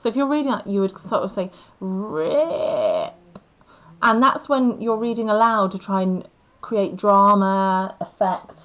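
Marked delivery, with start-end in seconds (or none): 1.8-3.1 "rip" dragged out and emphatically stressed. Showing how to read punctuation aloud for drama, a drawn-out, emphasized 'rip'. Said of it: "the hyphens here are to drag the word out".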